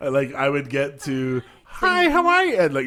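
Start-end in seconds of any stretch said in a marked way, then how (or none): 1.6-2.6 put-on high-pitched, whiny New Jersey accent, higher and louder. Imitating the voice of Fran Drescher from The Nanny: Fran Drescher voice. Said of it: "So the voice".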